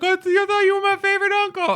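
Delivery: very high, loud, stammering, acted-out sobbing. Retelling a TV scene where the nephew is beaten by his uncle: mock crying as Michael J. Fox. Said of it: "Fox is like crying".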